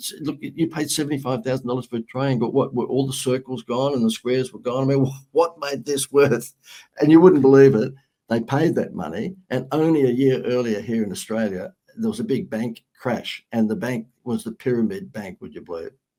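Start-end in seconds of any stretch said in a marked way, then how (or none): 0.0-6.5 dry, mocking, needling sarcasm. Retelling what was said to the accountants: retelling a sarcastic remark.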